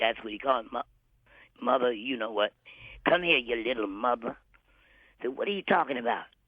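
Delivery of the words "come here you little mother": put-on rough voice, slower. Retelling how a man called you over for his show, imitating a rough voice. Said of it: "he always had that rough voice".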